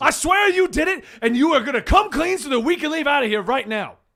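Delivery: very loud cartoon rooster voice. In a murder-mystery role-play, a character accuses another of the killing, Foghorn Leghorn voice. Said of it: "you hear what sounds like Foghorn Leghorn".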